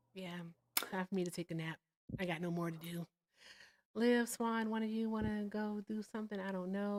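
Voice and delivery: hushed, soft half-whisper, under the breath. Asking the others if one of them wants to do something, half-whispering. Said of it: "I'm whispering. I just noticed that".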